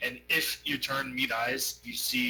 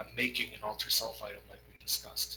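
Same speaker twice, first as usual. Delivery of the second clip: hushed, confiding whisper, close to the ear; 2 semitones lower, 6 dB quieter than usual. During a tabletop game, a player speaks into another character's ear, whispering. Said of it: "I'm just gonna whisper in your ear".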